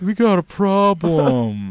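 very slow sheepish drawl, "problem" stretched out. Retelling how Aaron told the group about a problem: imitating Aaron sheepishly. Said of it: "Aaron looks at us sheepishly and says".

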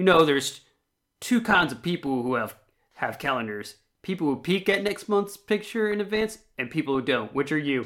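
plain

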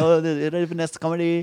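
put-on horrible, very slow, drawn-out Indian accent. Retelling a backstage bit, imitating own bad indian accent. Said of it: "I was doing this i-, fucking Indian thing".

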